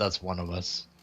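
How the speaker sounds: very quiet, very low, hushed mutter under the breath. Voicing a character who mutters under his breath: muttering under his breath. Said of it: "mutters under his breath".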